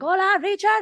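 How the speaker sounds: very high-pitched, really loud voice. Retelling greeting a guest in Spanish at an event: imitating own loud greeting. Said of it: "really loud".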